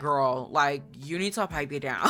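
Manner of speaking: ordinary delivery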